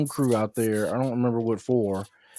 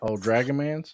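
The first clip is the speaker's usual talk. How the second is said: plain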